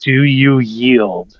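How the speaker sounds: steady, no-nonsense, firm commanding tone. In a tabletop game, grabbing and shocking a foe while asking for surrender, firm tone. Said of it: "in a firm tone".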